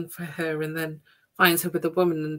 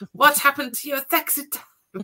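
play-acted shrill, outraged, furious outburst, very high; 9 semitones higher, 4 dB louder than usual. Retelling a film character's reaction to a failed plan: imitating someone furious. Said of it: "And she is furious".

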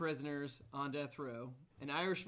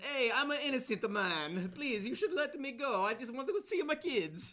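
put-on Italian-style cartoon accent, higher and louder; 9 semitones higher, 5 dB louder than usual. Telling a joke about a prisoner in the electric chair: Super Mario voice. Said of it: "are you Super Mario?".

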